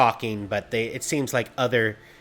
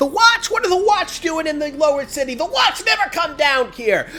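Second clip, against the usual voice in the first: many voices yelling, high and shrill; 8 dB louder than usual. Voicing people in a crowd doubting the Watch: yelling from the crowd. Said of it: "you'll hear a couple people yell out".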